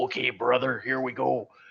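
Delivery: rough, creaky, raspy wrestler voice. A player voicing Todd trying something he saw on TV, in a bad Hulk Hogan impression. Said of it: "he's going to do his best Hulk Hogan".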